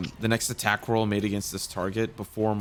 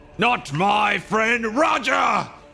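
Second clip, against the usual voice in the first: put-on shrill, very high, very loud, drawn-out old-man yell; 13 semitones higher, 9 dB louder than usual. Voicing an eighty-year-old character yelling while casting a spell: yelling as loud as an old man. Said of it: "I'm going to yell".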